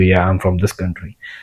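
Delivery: soft voice. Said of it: "let's suppose you and me are talking".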